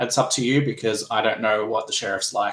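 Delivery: ordinary delivery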